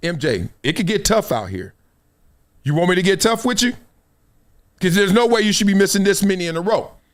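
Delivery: normal talking voice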